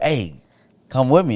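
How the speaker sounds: ordinary delivery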